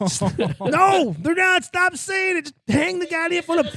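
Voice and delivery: very high, shrill, loud, full-throated yelling. Retelling telling mom to hang up in a packed restaurant: retelling own yelling. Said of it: "yelling, yelling at".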